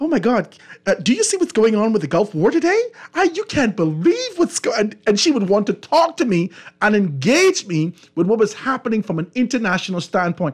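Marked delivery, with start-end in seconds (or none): 0.0-4.9 put-on proper English news reporter voice. Retelling phone calls with a woman who used a proper english reporter voice. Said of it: "she used to put on like the reporter's voice".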